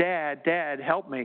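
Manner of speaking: acted-out tearful crying, slow. Retelling his son's phone call asking for help: imitating son crying. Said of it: "he's crying".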